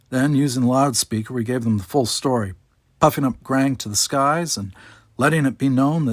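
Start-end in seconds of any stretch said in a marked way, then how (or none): none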